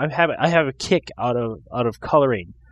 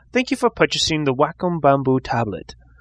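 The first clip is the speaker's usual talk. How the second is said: put-on British accent in smooth voiceover narrator style. Quoting the voiceover on a tablet's install disc to friends, imitating Wacom disc voiceover. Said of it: "Do they say it with that accent?".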